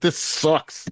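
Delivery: fake angry broadcaster voice. Joining in imitating an angry radio announcer: imitating Nathan Segura's angry tone. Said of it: "hear him trying to hold the anger back in his voice".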